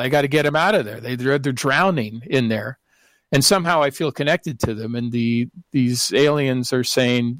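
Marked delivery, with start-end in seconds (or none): none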